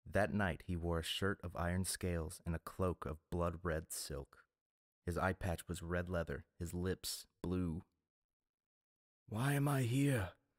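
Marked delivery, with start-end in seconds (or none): 9.3-10.3 hard-edged, high, croaking voice. A man on a voyage speaks to another man: croaking, hard voice. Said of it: "Aeron croaked at him".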